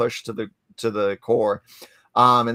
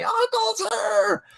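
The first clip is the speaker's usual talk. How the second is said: acted-out very high, creaky, rough excited kid yell. Retelling his five-year-old nephew running down the hallway, imitating a child screaming. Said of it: "came screaming down the hallway".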